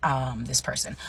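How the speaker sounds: ordinary talk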